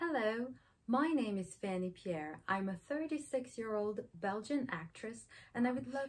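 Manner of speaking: fake London English accent. A belgian actress tries filming an english self-introduction video, london english accent. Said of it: "donc un accent anglais de Londres".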